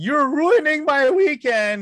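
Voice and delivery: mock drunk woman's very high, loud, drawn-out wailing scream. Retelling a drunk passenger stopped at the plane entrance: imitating her screaming. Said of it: "she was screaming".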